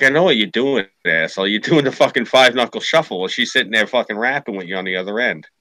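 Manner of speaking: ordinary talk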